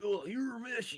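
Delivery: put-on very high, raspy schoolyard punk-kid voice. Describing a voice actor's roles, imitating his punk high-school kid voice. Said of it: "like punk high school kid".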